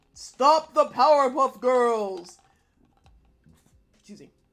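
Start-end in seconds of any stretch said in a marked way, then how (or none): 0.2-2.4 loud, booming, bellowing villain voice through a megaphone. Narrating a cartoon scene, Mojo calls out from his giant robot: Mojo bellowing through megaphone. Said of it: "Mojo's voice bellows from a megaphone".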